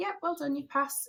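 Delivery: acted, calm, soft, matter-of-fact, understated words. Recalling the examiner announcing the pass, imitating examiner's calm tone. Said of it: "he said it so calmly as well".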